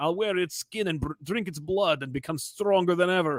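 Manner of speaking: soft, murmured, bad Russian accent. Summing up Kraven in a nutshell, in a bad Russian accent. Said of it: "in a bad Russian accent".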